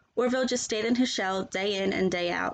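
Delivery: plain reading voice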